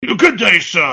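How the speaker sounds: put-on British explorer voice, pith-helmet style. Imitating an explorer in a pith helmet, British accent. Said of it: "had like that British voice, that that British accent".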